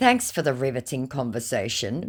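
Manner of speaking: ordinary talk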